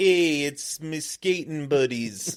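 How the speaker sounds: put-on weird Canadian accent, high and drawn out. Speaker recalls playing a half-Canadian hoser joining skaters: weird Canadian hoser accent. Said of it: "That was a weird accent".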